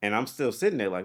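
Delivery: normal talking voice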